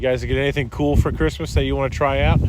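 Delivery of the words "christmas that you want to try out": normal talking voice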